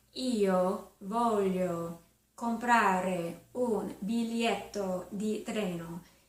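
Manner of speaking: slow, deliberate Italian, every syllable kept clear. Teaching how to ask for a train ticket in Italian: slow, clear syllables. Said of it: "I'm slowing this down".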